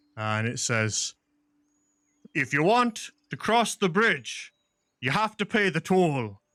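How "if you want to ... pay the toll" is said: big, loud, booming voice, pitched up. Voicing an unseen figure demanding a bridge toll: booming voice. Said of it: "a voice booms out loud".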